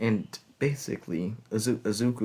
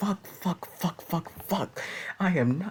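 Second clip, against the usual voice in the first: frantic, very high, panicked swearing screams; 9 semitones higher than usual. Retelling how Azuka reacted while driving, imitating his panicked screaming. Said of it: "He's just basically fucking panicking".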